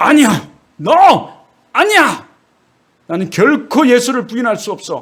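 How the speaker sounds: high, loud, tearful crying shout.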